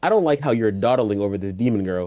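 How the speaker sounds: normal talking voice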